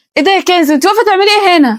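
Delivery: speaking loudly. In a skit, surprised to find Kanz standing there, asking too loudly. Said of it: "هش وطي صوتك".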